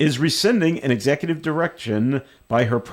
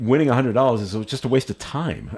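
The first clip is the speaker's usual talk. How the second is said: ordinary talk, nothing marked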